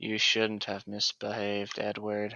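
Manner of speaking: mock dull, flat, low, emotionless monotone voice. Imitating her talking to Edward, mock flat emotionless monotone. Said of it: "in her like stupid monotone voice, just with no emotion".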